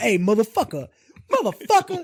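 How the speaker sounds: loud, light, swooping, over-the-top belted voice. Imitating an actor reacting to a far-fetched script: Samuel L. Jackson impression. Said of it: "that's my Sam Jackson".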